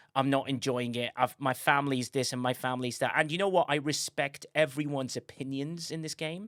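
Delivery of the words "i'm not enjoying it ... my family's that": ordinary talk, nothing marked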